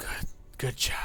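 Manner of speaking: soft, breathy, whispered spirit voice. A game master voicing what players hear at the tree, whispering Zendaka voice. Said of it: "you hear the voice of Zendaka just like whispering".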